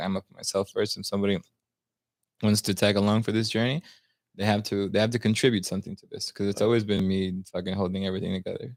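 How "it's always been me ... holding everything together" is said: ordinary talk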